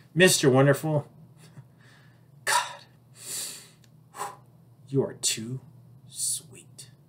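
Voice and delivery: soft, sweet whispered talk. Retelling what his date whispered in his ear after their kiss, in a reenacted whisper. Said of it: "she whispers in my ear".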